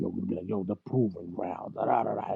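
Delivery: rough, hyped, pumped-up trailer announcer voice. Retelling how someone pitched a trailer: imitating Beasley's hyped trailer voice. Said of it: "he goes into character".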